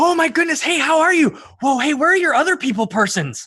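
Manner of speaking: put-on very high, booming, excited young dragon voice. A young bronze dragon calls down from above a ledge: booming excited young dragon. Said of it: "booms the excited voice of a young bronze dragon".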